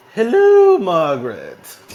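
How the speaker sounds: high, very loud, belted royal English accent. Doing a British accent when asked to, as the Queen of England. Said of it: "It's the Queen of England".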